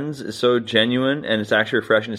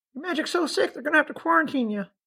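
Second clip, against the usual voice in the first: very high, pitched-up puppet-style voice; 5 dB quieter than usual. During a magic bit, the performer voices the puppet answering, in Bilbo puppet voice. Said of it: "I'll give him voice over here".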